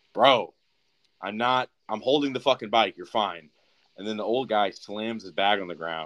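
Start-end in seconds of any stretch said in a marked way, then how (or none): 0.2-3.5 mock raised shouting voice, slower. Retelling an argument, quoting the guy on the bike: retelling a raised voice. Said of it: "raises his voice".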